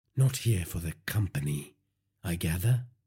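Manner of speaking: ordinary delivery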